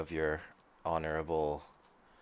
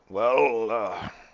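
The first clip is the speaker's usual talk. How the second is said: high-pitched, loud, scoffing voice. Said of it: "and he's like".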